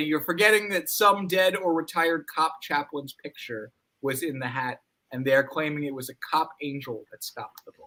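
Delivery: ordinary delivery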